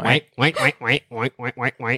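put-on duck voice, like a duck's call. Asked for their best duck impression, showing it off: duck impression. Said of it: "That's my duck".

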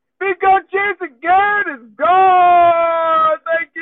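thrilled, loud and high voice, gone stretched long. Show host answering why she sounds so excited: excited. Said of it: "why do you sound so excited right now".

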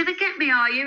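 heavy, taunting, very sarcastic tone. Retelling answering a man who threatened them, retelling a sarcastic reply. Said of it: "And I was very sarcastic about it".

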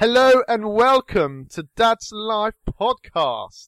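put-on posh accent. Podcast host redoes the show's opening a bit more posh, posh voice. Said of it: "maybe I should do it a bit more posh".

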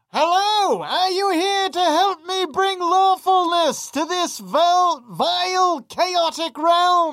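very high fantasy creature voice. Voicing the creature that lands and greets the players: voicing the landing creature. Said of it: "The creature lands, and then you hear".

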